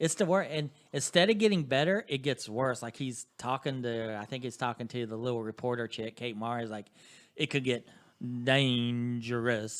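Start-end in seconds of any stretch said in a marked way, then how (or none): 7.4-9.8 put-on horrible, slow, dragged-out South Carolina accent. Imitating Kevin Spacey's line from the show: horrible South Carolina accent. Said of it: "and he says it like that".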